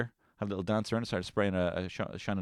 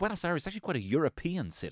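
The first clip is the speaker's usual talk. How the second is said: mock patronising, sing-song, pitched-up know-it-all tone; 8 semitones higher, 3 dB quieter than usual. Mocking people back from trips abroad, admitting doing it too, mock-condescending. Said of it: "and I've done it too".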